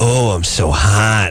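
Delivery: put-on phone sex line woman's voice. Retelling a phone sex ad: imitating a phone sex ad woman. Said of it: "chick talking on the phone".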